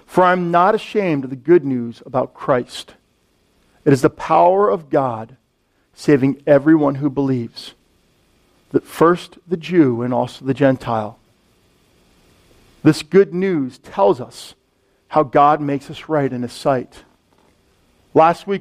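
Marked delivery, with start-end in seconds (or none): 0.1-16.9 slow, unhurried, very low, deep reading voice. Rereading a scripture passage aloud to listeners: reading a little slower. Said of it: "a little slower".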